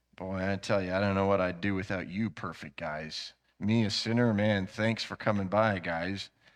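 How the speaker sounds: put-on heavy sarcasm. Acting out his reply to his friends: retelling a very sarcastic response. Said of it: "a very sarcastic response to his friends".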